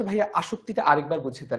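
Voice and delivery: ordinary talk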